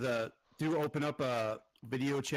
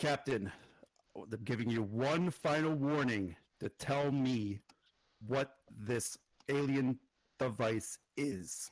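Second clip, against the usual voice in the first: exasperated, very annoyed, slow and measured; 3 semitones lower than usual. Game master voicing a woman questioning the captain, giving a final warning; very annoyed. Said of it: "she becomes very annoyed".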